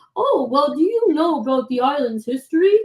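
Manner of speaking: put-on elderly man's way of talking. Retelling what a cute little old man asked: impression of an old man. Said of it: "that's my best impression".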